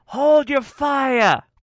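very high yelled delivery, the word "fire" drawn out. On the ship as weapons are aimed at the dragon, yelling down an order. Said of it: "I yell down".

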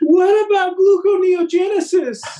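very high, loud shout from far back. Playing the annoying kid at the back of keto class: mock yell as annoying kid. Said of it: "I'm gonna yell out".

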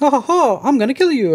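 very high, prim, polite droid voice. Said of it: "dumb, like, proper etiquette speech".

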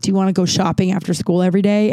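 normal talking voice

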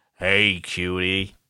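loud put-on Western cowboy accent. Co-hosts compete at a greeting in their best cowboy accent. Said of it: "in our best cowboy accent".

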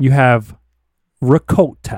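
strong, very British-sounding accent. Listing what lasagna has, very British accent. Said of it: "I said that very British".

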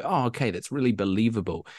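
ordinary delivery

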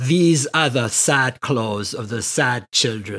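low, bone-dry deadpan delivery. Retelling a woman's imitation of a filmmaker, deadpan Werner Herzog impression. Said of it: "she imitates him and he goes like".

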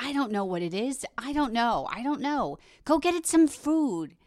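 high, loud yell that keeps building. Retelling a scene, the speaker acts out a woman yelling at the droids: imitating her yelling. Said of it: "she's yelling at the droids saying".

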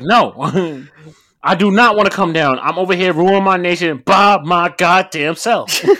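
high-pitched, loud, small little voice. Recounting people casting a comedian as Doctor Doom, do Doom in a Katt Williams voice. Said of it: "in like the little Cat Williams voice".

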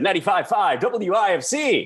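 full-on, very high on-air radio announcer voice. Retelling naming the station after winning a radio contest, in a very radio voice. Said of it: "And in a very radio voice".

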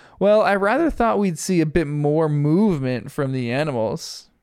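ordinary talk

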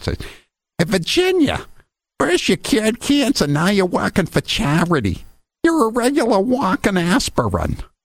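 very high, swooping, put-on Boston accent. Quoting a line addressed to Virginia: Boston accent. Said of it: "Boston accent".

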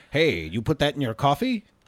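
ordinary talk

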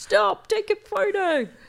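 very high, shrieking, screamed call-out. Telling a trip story, reenacting screaming out to get a photo: retelling a scream. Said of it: "I'm screaming out".

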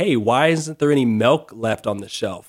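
plain

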